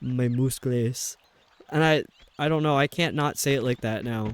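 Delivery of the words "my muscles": mocking, put-on Swedish accent. Quote a Swedish man making fun of his own accent, in a mocking Swedish accent. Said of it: "he's Swedish, and he was also making fun of his own accent".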